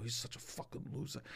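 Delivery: imitated quiet whisper. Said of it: "I whisper to my friends".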